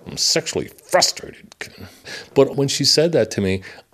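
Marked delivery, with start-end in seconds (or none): 0.1-1.5 high, forced out through clenched teeth. Retelling what a woman once shouted at the speaker: imitating her through clenched teeth. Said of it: "Clenched teeth".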